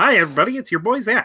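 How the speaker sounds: very high put-on puppet voice, played straight. Imitating Zach's catchphrase, told to go straight Kermit: Zach voice done as Kermit. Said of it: "just go straight Kermit".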